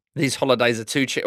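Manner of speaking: ordinary delivery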